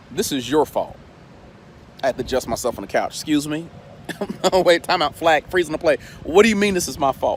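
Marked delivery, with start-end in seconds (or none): 0.1-0.9 put-on somber, quiet voice. A speaker retells God speaking to him on the couch, in a somber, quiet tone. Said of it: "God begins to speak to me in a somber, quiet tone".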